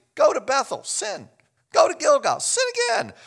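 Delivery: put-on very high, swooping, heavy sarcasm. Quoting the prophet's words, imitating a sarcastic prophet. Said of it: "the prophet is so sarcastic".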